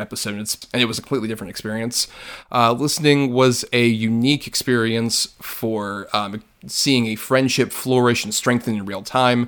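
ordinary talk

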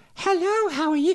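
put-on very high, childlike sing-song little-girl voice. Retelling how the girl at the store counter greeted them: imitating a high-pitched voice.

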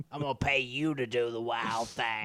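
put-on smoky, old grandmother-like voice. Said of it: "why do you sound like my smoker grandmother".

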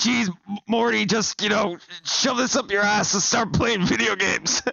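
very high-pitched cartoon character voice. Asked for an example, the speaker answers in a Rick from Rick and Morty voice. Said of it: "what that would sound like from like a Rick and Morty's voice".

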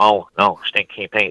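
nasal pinched-nose voice. Speaker demonstrates performing a funny piece with fingers in nose, nasal. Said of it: "you just put your fingers in your nose".

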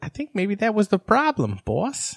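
put-on New Jersey accent. Speaker talking with others in the room, in a Jersey accent. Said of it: "Is that your Jersey?".

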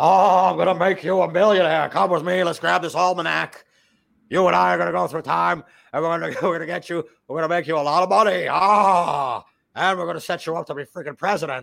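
very high, creaky, eager pitch, Ah stretched. Acting out a made-up scene, imitating John Trump promising his nephew riches. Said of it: "John Trump says".

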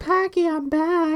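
piercing, very shrill, very high calling voice. A player has their character call out to a companion, in a really shrill voice. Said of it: "I'm actually gonna really shrill voice like".

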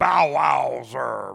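rasping, rough, very loud bellow. Retelling a customer's impression of a game character: Bowser impression. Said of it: "he's doing an impression of Bowser".

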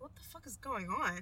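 ordinary talk, nothing marked

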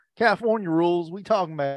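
put-on hillbilly Southern accent. Showing how to say a phrase, in a hillbilly Southern accent. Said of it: "just think hillbilly".

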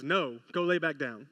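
slow, stern, no-nonsense delivery. Retelling how Darla sent a child back to bed: imitating a stern voice. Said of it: "Darla's stern".

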